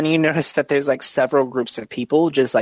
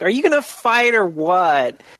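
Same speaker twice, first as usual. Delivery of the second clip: whiny, high-pitched voice; 6 semitones higher than usual. Narrating the scene, the speaker voices a character challenging the listener: Licorice Avenger whiny voice. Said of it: "You hear a really whiny voice that's like".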